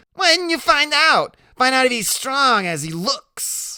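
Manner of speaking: strange, giggly, very high voice. Poking Iggy, Loretta asks him about the narrator in a strange, giggly voice. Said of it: "in this strange, giggly voice".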